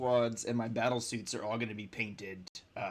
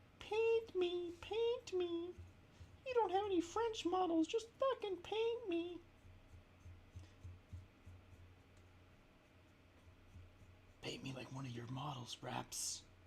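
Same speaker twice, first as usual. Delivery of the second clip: very high, soft, swooping squirrel squeak; 8 dB quieter than usual. Talking about clips of a show, acting out a line: high-pitched squirrel voice. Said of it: "In a high pitched voice like a squirrel".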